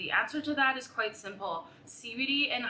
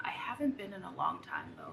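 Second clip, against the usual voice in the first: soft whisper under the breath; 7 dB quieter than usual. Explaining how they reduce anxiety and use CBD, whispering.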